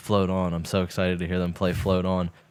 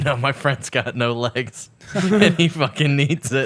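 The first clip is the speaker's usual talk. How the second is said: put-on words through laughter, pitched up, slow; 6 semitones higher, 4 dB louder than usual. Retelling answering people who asked to borrow the stool, retelling a laughing reply. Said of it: "And I was just laughing, going".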